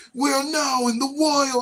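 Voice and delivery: deliberately awful put-on Australian accent, very high-pitched. Recalling narrating an off-trail hike, in a horrible Australian impression. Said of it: "my most horrible Australian impression".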